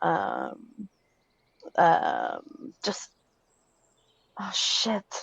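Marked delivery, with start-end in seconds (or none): 2.8-5.2 breathy, hushed, whispered mutter. A game narrator voices a character at the mention of a town, muttering under her breath. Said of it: "mutters under her breath".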